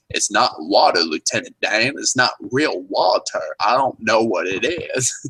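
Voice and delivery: slow, drawn-out Southern drawl. Retelling how a guy touched fake water and did a Forrest Gump impression. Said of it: "he takes on an impression of Forrest Gump".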